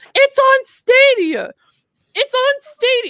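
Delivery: mock very high, drawn-out angry yelling. Recalling watching the PlayStation conference, the speaker reenacts their own angry yelling. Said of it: "I'm just yelling this".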